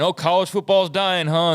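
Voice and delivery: mock gloating jab. Quoting people taking victory laps over college football ratings: imitating people mocking. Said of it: "mockingly saying".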